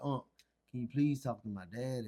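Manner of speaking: put-on crying, tearful pleading voice. Retelling a younger cousin's phone call asking for help, imitating someone crying. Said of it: "He called me Unc crying".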